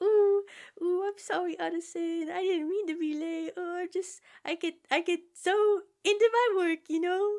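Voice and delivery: put-on very high, timid, shy, stuttering little-boy voice. Retelling how Jekyll apologizes for being late: imitating a shy, soft-spoken, stuttering Jekyll. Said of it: "shy little boy way, like he's all soft-spoken and stuttering".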